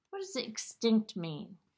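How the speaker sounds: plain reading voice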